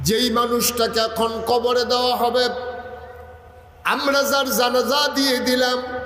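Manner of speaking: slow, tearful, weeping voice.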